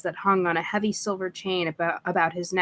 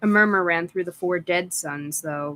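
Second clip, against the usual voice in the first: ordinary delivery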